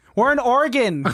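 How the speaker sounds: high-pitched, loud shouting. Repeating an answer to a customer who said excuse me: shouting. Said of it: "You don't need to shout at me".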